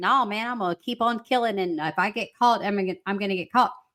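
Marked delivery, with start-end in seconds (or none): none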